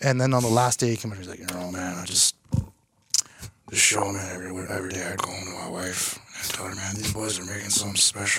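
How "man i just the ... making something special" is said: deep sexy impression, lower, quieter, slower. Retelling what a quiet man from the show said on the last day: deep sexy Ford commercial voice. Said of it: "a very deep, lust, sexy voice, like a Ford commercial voice".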